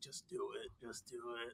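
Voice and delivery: barely audible, very quiet whisper. Retelling a movie scene where someone whispers to himself: imitating someone whispering. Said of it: "whispering himself".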